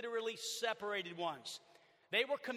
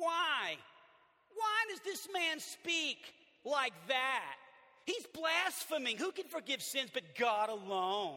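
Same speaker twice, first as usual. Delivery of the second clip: put-on whining, grumbling complainer's voice; 3 semitones higher than usual. Reading the critics' questions from Mark 2 aloud, in a mock-whiny voice. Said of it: "I'm going to say it like maybe they said it, because these guys were whiners".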